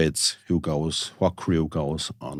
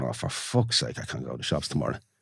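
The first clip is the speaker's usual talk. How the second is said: soft, muttered, complaining tone in her own voice; 4 semitones lower, 5 dB quieter than usual. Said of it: "and in that tone".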